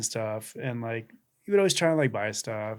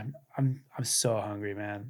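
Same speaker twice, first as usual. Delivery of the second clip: put-on defeated, tearful voice, near tears; 4 dB quieter than usual. Retelling what a hungry man caught with a sandwich said: imitating a defeated, tearful voice. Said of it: "he's so defeated".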